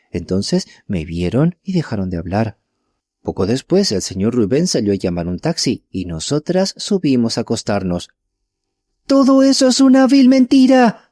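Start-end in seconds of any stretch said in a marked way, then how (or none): 9.0-10.9 very high, shrill, loud, trembling, quavering cry. Narrator reads a woman suddenly interrupting another speaker, in a shrill trembling voice. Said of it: "una voz aguda y temblorosa".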